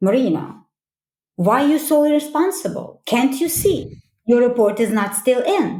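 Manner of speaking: pointed, accusing, judgmental, blaming tone. Showing an example of judgmental direct criticism: judgmental, blaming. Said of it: "This is judgmental direct".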